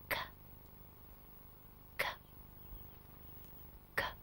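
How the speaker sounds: very soft, barely voiced, whispered k sounds. Showing the K sound again so the cat stays asleep: very quiet whisper. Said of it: "Very quietly".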